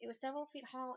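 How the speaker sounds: ordinary delivery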